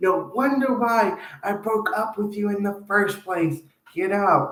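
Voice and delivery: fed-up, angry scolding outburst, yelling. Describing an imagined woman yelling at her ex-boyfriend: imitating a woman yelling at her ex. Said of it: "she's yelling at her ex-boyfriend saying".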